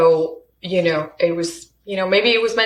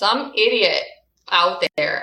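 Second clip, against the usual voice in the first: imitated, said really loud. Retelling an answer to his wife about the roses: imitating saying it really loud. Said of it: "I said it really loud so he could hear".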